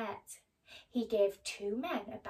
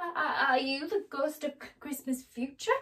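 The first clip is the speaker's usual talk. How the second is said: faltering, stuttering stammer; 4 semitones higher, 5 dB louder than usual. A narrator reads Scrooge's question to the cloaked spirit: stammering. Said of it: "stammered Scrooge".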